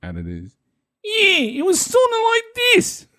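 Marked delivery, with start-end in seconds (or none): 1.0-3.0 high, put-on New York accent. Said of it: "I played him with a New York accent".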